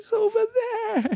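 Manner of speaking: very high, cackling creature voice. Narrator reading Gollum's words as he sits up and looks at him, cackling Gollum voice. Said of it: "he cackled".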